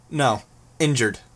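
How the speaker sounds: ordinary delivery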